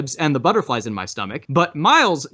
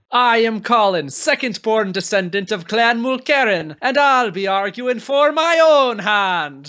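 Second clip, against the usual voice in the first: awful fake Scottish accent, pitched up; 8 semitones higher than usual. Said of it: "a terrible Scottish accent".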